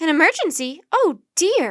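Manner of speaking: very loud, high, squeaky, swooping exclamation. Narrator voicing a woman answering Annie, in a high, squeaky voice. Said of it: "exclaimed the woman in a high, squeaky voice".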